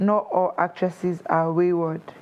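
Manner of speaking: ordinary talk, nothing marked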